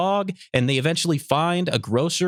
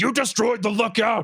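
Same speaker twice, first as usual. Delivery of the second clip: mock high-pitched accusing yell; 5 semitones higher than usual. Retelling the scene where Piccolo blames Gotenks: imitating Piccolo yelling. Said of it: "He yells and says".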